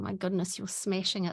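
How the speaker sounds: ordinary talk, nothing marked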